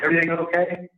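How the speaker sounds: acted loud high shout. Retelling opening the bathroom window to people outside, retelling yelling out a window. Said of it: "like yelling out".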